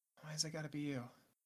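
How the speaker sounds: under-breath mutter. Narrating a game scene, the speaker voices Henri muttering under her breath as the door closes. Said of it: "says underneath her breath".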